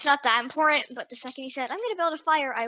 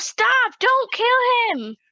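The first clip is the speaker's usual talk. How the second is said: high, drawn-out shouted yell, in character; 10 semitones higher, 7 dB louder than usual. Voicing Trinity as Twig raises a giant tree branch: yelling in character. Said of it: "Trinity's gonna yell".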